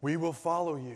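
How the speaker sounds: dazed, zombie-like voice. Retelling the disciples answering Jesus: zombie-like reply. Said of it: "almost like zombies".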